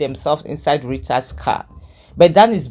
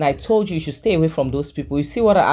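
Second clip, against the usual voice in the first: ordinary talk, nothing marked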